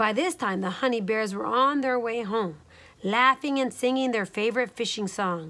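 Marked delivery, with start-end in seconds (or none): none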